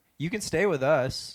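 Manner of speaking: ordinary talk, nothing marked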